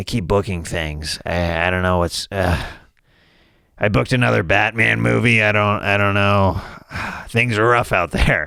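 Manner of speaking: put-upon curmudgeon grumble. Imitating a successful podcast host who still complains: Marc Maron impression. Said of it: "My impression of him is".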